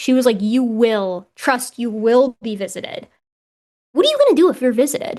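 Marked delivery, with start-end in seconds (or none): 0.4-3.1 slow, ominous, faintly menacing tone. Retelling Renee's promise that they would be visited: imitating Renee sounding menacing. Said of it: "it sounded a little menacing".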